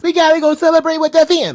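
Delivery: put-on high loud New Jersey Italian accent. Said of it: "She's doing New York, New Jersey Italian".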